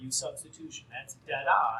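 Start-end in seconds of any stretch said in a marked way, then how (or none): 0.0-0.9 put-on whisper, much quieter. Working through an integral, the speaker retells a whispered hint from the room, retelling a whisper. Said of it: "I heard Jillian whisper".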